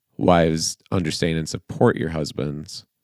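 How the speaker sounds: ordinary talk, nothing marked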